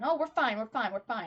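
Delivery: acted brave front, brushing it off, tough-guy manner. Imitating characters putting on a brave front: imitating a brave tough-guy act. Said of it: "this brave, tough guy act on".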